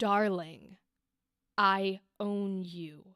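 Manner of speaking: tense, held-in delivery. Coaching how to play this kind of character, demonstrating the line with held tension. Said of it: "Keep that tension".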